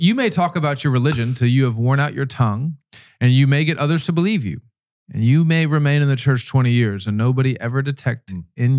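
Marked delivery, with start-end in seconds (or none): none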